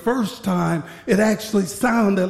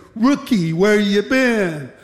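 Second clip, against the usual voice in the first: put-on snide, sarcastic, needling tone; 3 dB louder than usual. Retelling a superior questioning a new guard: imitating a sarcastic superior. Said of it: "he said sarcastically".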